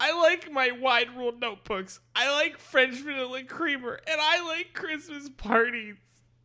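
very high-pitched, put-on, tearful weeping through the words. Acting out a character giving a speech, crying while speaking. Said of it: "he's crying as he's giving his speech".

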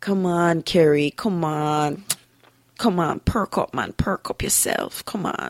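grandmotherly voice with a coaxing, urging tone. Speaker recalls how her grandmother urged her on, imitating grandmother urging. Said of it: "I hear her in my head the way she would say it".

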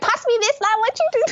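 very high-pitched shouting. Retelling how the speaker's aunties shouted at a hawker center; retelling aunties shouting. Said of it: "my aunties like shouting".

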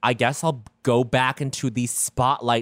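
normal talking voice

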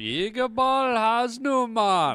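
very high, yelled, put-on Jamaican accent. Telling a friend how he used to call out to a schoolmate, yelling in a put-on Jamaican accent. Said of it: "I would do a Jamaican voice".

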